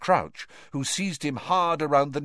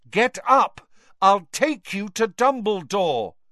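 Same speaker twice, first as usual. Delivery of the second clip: loud, clear, carrying call, raised pitch; 6 semitones higher, 5 dB louder than usual. In a narrated story, someone tells a raving man to get up, loud and clear. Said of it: "said Harry loudly and clearly".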